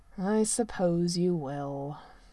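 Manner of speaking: very slow, low, stretched-out drawl. Riding alongside Merlin, the prince answers him, drawled. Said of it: "the prince drawled".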